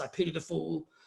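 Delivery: low, deep, dropped tough-guy voice. Showing a Mister T impression after describing his deep voice. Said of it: "that's a pretty good Mister T".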